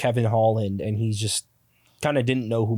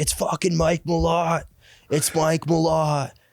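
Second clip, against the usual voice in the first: all-out hollering and screaming; 6 semitones higher than usual. Retelling how Loretto screamed at a fighter: imitating Loretto screaming. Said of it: "he just starts screaming at him".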